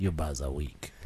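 put-on voice, as low as possible, kept soft.

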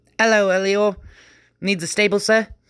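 very high, cheerful, chipper little gnome voice. A gnome opens the inn door to a rider: chipper gnome voice. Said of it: "The gnome's chipper voice".

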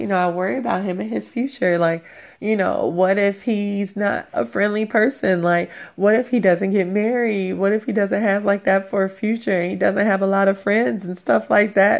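acted-out, weepy, boo-hooing, tearful crying speech. Retelling own past worried words while reenacting crying. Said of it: "crying and boo-hooing and being emotional".

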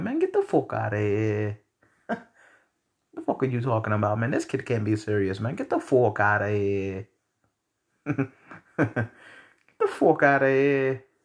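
put-on Italian accent, laid on, swooping pitch. Reacting to talk of a poor orphan boy, in a put-on Italian accent. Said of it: "I'm finna turn into my Italian voice".

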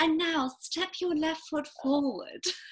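put-on posh British accent. A yoga teacher imitating her own voice while teaching class, posh English voice. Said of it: "mine is way more posh out loud".

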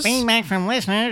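very weak, feeble, weedy little voice. Announcing listener feedback on the podcast, a host speaks in a weedy voice. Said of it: "My weediest Um, voice".

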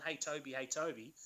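plain

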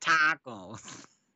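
put-on loud Minnesota accent on tacos.

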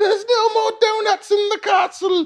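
put-on regal puppet queen voice. Joking about the queen going out for food: Spitting Image puppet Queen Elizabeth voice. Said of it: "She's not a fucking spitting image puppet".

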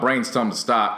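normal talking voice

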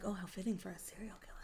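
fast, whispered delivery.

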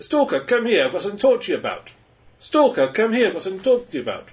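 put-on Russian accent with a high voice. Imitating a game character who keeps repeating a line: Russian accent. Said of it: "'cause all in Russian accents".

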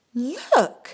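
sudden, high, loud horrified exclamation. A character glances through the classroom window, exclaiming in horror. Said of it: "she exclaimed in horror".

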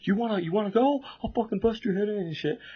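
put-on shrill, very high, drunken screaming and yelling. Telling a story, speaker imitates a drunk guy screaming at them: retelling a drunk's screaming. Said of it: "screaming at me".

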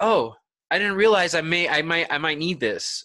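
ordinary talk

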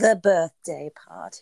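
booming fake British accent, very loud. Showing off an accent to the other speaker, put-on British accent. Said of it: "Don't you like when I do my British accent?".

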